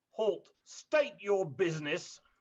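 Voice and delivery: called-out, challenging hail. Running the game, the speaker voices someone calling out at the door: booming voice. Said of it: "a booming voice calls out".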